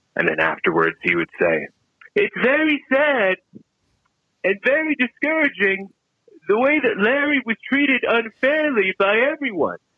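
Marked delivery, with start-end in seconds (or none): 2.2-9.8 put-on, very high, overblown statesman delivery. Leaving a voicemail, quoting what someone would say: Donald Trump impression. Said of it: "his Donald Trump impression".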